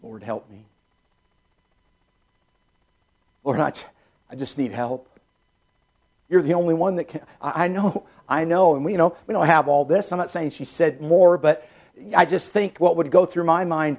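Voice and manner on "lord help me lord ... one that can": put-on softer voice, much quieter. Acting out what a lady says, in a little softer voice. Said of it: "but in a little softer voice".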